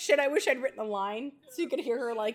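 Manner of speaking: ordinary talk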